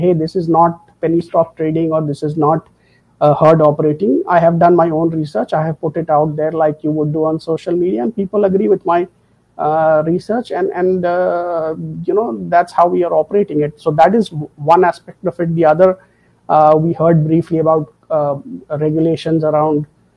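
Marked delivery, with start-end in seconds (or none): none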